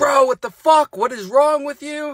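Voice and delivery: mock very high, incredulous, startled yell. Retelling how the bunkmate reacted in the cell: imitating a yelling cellmate. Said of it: "He's yelling at me like".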